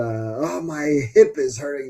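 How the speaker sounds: slow drawn-out whining. Mocking young players who skip games to rest: mock complaining about a sore hip. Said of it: "can we stop with the".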